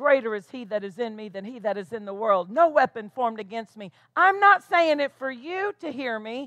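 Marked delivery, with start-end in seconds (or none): 0.0-3.9 low, soft, quick mutter under the breath. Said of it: "muttering it to yourself".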